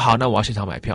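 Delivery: ordinary talk, nothing marked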